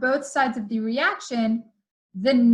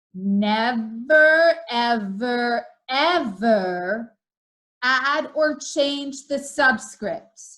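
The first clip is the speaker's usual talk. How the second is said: very slow and deliberate, "every" and "ever" drawn out. Explaining how to balance equations, stating the rule the first of three times, very slowly. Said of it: "say this three times very slowly".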